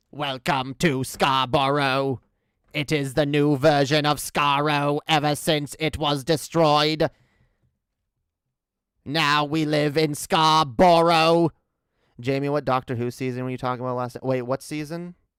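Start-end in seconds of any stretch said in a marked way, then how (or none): 0.2-11.5 put-on robotic alien voice, louder. Welcoming someone to Scarborough in a Dalek voice. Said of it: "This is a Dalek".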